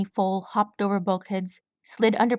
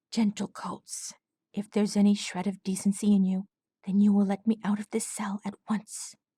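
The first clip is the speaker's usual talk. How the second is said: airy, breathy voice. A caged lieutenant keeps his cool, addressing his captors in a breathy tone. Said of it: "speaking in a breathy tone".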